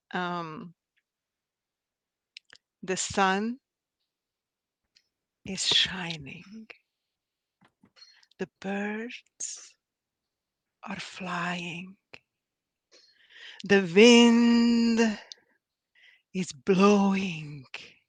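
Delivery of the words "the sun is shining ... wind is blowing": slow, half-whispered poem-style reading. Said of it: "I'm gonna try to read this slow now".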